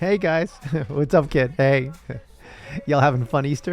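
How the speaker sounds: high-pitched, casual regular-guy voice. Greeting the kids on Easter as Jesus: Jesus impression. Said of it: "is that your Jesus impression?".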